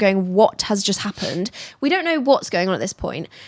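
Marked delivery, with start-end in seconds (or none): 0.3-1.5 frantic, bewildered, panicked freaking-out cry. Retelling how everyone on the boat reacted: imitating panicked people. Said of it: "now panicking and, like, freaking out".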